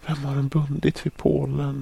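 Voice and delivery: very high, aghast, horrified voice. Narrator reads Amanda reacting on seeing someone tied to a stake; horrified question. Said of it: "Sa Amanda förskräckt".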